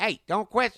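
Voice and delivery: very loud, very high, shrill scolding yell. Doing an impression of the guy who ran the comedy club: imitating Mark Payne. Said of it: "he talked like this".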